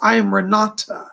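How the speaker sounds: put-on German accent. Relaying the words of a spirit lady during a reading: German accent. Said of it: "She speaks with a German accent".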